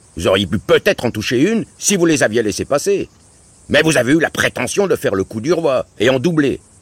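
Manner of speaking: scornful, disdainful tone. Narrator voicing Uncle Jules replying to the father at a shoot: contemptuous. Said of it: "répliqua l'oncle Jules avec mépris".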